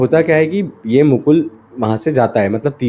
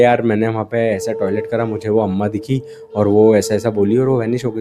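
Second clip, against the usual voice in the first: ordinary delivery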